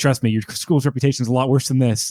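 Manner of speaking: plain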